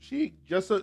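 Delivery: voice cracking. Answering a viewer's question from the chat, voice cracking. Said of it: "my voice cracked there".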